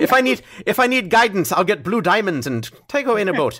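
high, put-on Scottish accent drifting toward Irish. Repeating the quoted line from the show: put-on Scottish accent. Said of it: "my apologies to all of the Scottish".

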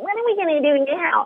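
put-on boy voice. Retelling a moment of imitating a child overheard at home: imitating Jimmy's voice. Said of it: "and I imitated his voice".

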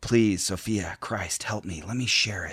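very soft, muttered murmur. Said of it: "And she's saying".

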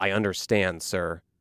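play-acted seething, mean, rage kept in check. Retelling a driver answering a passenger's warning, imitating mean, held-back rage. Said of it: "in a very mean, like holding back rage".

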